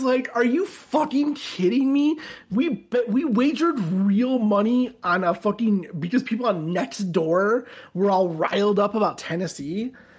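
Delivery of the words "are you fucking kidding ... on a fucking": seething, enraged, livid, furious outburst. Retelling his own reaction when a group bet was going wrong, retelling a livid outburst. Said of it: "I was livid".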